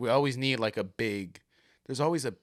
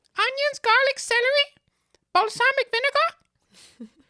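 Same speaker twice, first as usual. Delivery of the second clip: very high, very loud, drawn-out character voice; 9 dB louder than usual. Trying the impression of the ingredient list again: Elmo voice. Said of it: "That's a big word for Elmo".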